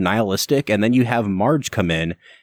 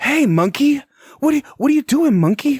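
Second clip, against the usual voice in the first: very high, pitched-up put-on celebrity voice. Summing up the remake as talking to apes: Mark Wahlberg impression. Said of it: "he sounds just like Mark Wahlberg".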